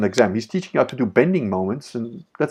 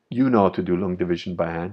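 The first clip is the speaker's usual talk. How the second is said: put-on dead-serious tone, lower; 5 semitones lower than usual. Retelling how the teacher answered a laughing student: imitating a dead serious question. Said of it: "he looked at me dead serious".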